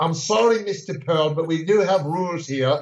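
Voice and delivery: slow, unhurried put-on English accent, male voice. Imitating a contest head judge enforcing the rules: Oscar State English accent impression. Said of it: "That's a perfect imitation".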